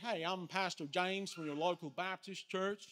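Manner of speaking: put-on American accent, pastor-style voice. Imitating an american pastor knocking on doors, american accent. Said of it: "I won't do the accent for the whole thing".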